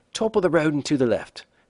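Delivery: bad British accent. Retelling answering a woman who asked where the bathroom was, in a bad British accent. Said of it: "in my best British accent".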